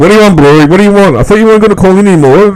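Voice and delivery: very high, loud, unhinged ranting. Retelling how Hansi reacts when a caller calls in: imitating Hansi going nuts. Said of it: "he absolutely goes nuts".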